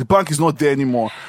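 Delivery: grouchy, put-out, grumpy man's voice. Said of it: "grumpy guy".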